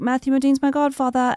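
English-sounding accent.

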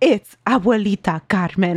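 eerie, spooky storytelling voice. Retelling how he said his name in his scary story voice: spooky storytelling voice. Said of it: "he literally said it in that voice, like his scary story voice".

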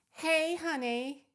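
fake American accent. Trying out accents with another speaker, the speaker does a put-on American accent. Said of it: "do an American that. Accent?".

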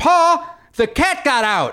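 horrible Southern drawl, very high, slow, drawn out. Retelling what Oliver shouted in the background, in a horrible Southern accent. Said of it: "horrible Southern accent".

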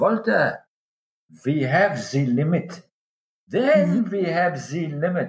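put-on German accent, slowed. Retelling what an underwater cameraman said on a dive: German accent. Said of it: "He says to me in his German accent".

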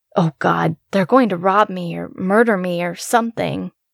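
ordinary delivery

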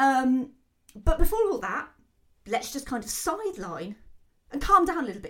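high, loud, excited burst. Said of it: "I feel like I'm getting quite excited".

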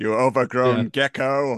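put-on elderly man character voice. Retelling a scene from the movie, imitating Cagliostro. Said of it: "I love the way he talks".

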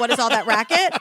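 normal talking voice

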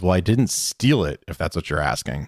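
smug, self-satisfied, knowing, understated delivery. Retelling a scene, quoting Zuko's line: smug Zuko voice. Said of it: "Zuko so smugly says".

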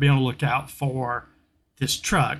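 ordinary talk, nothing marked

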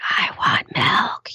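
put-on little-kid voice, whispered. Retelling how a kid interrupted an interview: imitating a child whispering. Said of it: "she's whispering".

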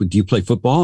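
normal talking voice

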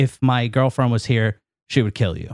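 normal talking voice

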